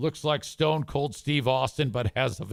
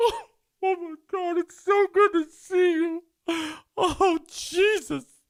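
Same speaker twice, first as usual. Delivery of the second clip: very high, slow, drawn-out tearful emotional gushing; 4 dB louder than usual. Retelling how Leon greeted the speaker, imitating Leon gushing emotionally. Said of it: "Leon gets emotional like a chick".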